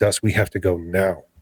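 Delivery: frightened, scared voice. Retelling telling a companion to leave, imitating own frightened urging. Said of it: "I started shaking, a-, and I said".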